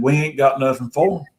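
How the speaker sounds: ordinary talk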